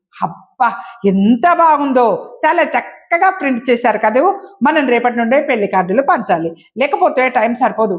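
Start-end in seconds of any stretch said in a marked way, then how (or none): none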